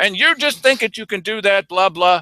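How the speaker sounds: telling-off tirade. Retelling being scolded at a meeting: imitating Keith Eck scolding. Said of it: "Keith Eck lights into me".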